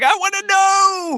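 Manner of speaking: high, slow mock shout.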